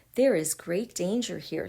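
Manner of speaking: ordinary delivery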